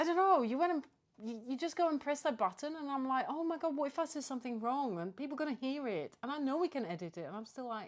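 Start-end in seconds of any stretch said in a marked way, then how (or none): 3.3-6.1 play-acted anxious, panicky, worried voice. Retelling own thoughts when the recording button is pressed: imitating own panic. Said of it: "Why do I panic?".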